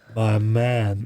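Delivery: stiff, flat, lifeless, wooden delivery. Trying to copy an actor's line from a film: imitating a wooden line delivery. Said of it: "I'm trying to do it".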